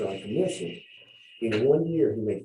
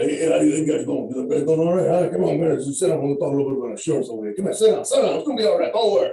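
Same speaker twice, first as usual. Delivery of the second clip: loud, high, fiery, hot-tempered Italian voice; 5 semitones higher, 6 dB louder than usual. Speaker imitates how a man he is describing talks: imitating an angry italian voice. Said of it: "if God was angry and Italian, that's the voice he's got".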